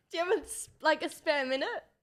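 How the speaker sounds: close to tears. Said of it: "You sounded like you were crying".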